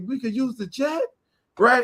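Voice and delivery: put-on clowning, mocking, tongue-in-cheek teasing. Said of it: "We in the clowning".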